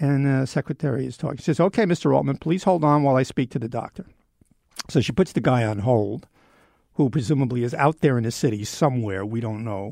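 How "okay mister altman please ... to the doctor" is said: ordinary talk, nothing marked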